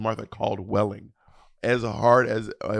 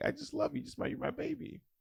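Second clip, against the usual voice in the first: very high, soft, hushed, weepy tearful voice; 14 dB quieter than usual. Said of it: "she's crying".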